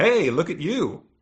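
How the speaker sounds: fake-cheerful, condescending tone. Reader voicing Felix greeting her on the pool deck, fake, cheerful, condescending. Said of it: "in that fake, cheerful, condescending voice".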